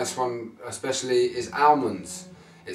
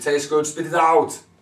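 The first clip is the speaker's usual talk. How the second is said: loud, so-so imitated Austrian accent; 4 semitones higher, 6 dB louder than usual. Repeating a quote as Arnold Schwarzenegger: Arnold Schwarzenegger accent. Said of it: "so that was my Arnie accent".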